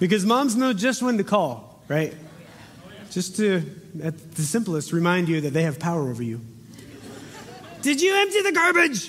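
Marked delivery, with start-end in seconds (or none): 7.8-9.1 very high, sour-sweet, unsweet voice. Imitating a mom calling her kid about the garbage, in a not-so-sweet mom voice. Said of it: "not so sweet of a sweet mom voice".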